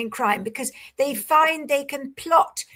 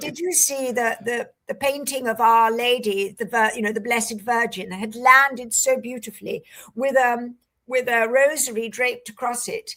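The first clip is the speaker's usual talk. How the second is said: ordinary talk, nothing marked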